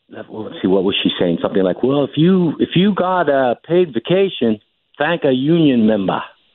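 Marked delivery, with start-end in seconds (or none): 1.8-6.2 put-on Boston accent, much higher, slower. Quoting what she said with her new union accent, in a Boston accent. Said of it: "You sounded more like a Boston accent".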